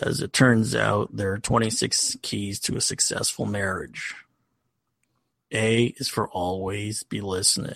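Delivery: low, groggy, just-woke-up voice. Giving a wedding toast in a Stephen Wright impression. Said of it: "a Stephen Wright impression".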